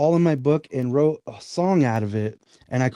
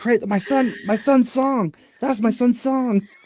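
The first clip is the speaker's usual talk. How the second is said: high, frantic, freaked-out blurting outburst; 9 semitones higher than usual. Retelling how his mom reacted to a movie title: imitating someone freaking out. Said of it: "she freaked out".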